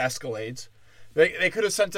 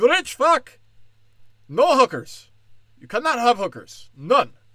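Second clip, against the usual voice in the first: loud, slow, deliberate put-on Indian accent; 7 semitones higher, 5 dB louder than usual. Speaker voices the men barging in on the rich guy, put-on Indian accent. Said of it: "I'm gonna stick with it".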